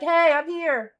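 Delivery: distant, far-off voice. Imitating another speaker whose phone voice sounded far away: imitating someone sounding far away. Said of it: "You sounded hella far away".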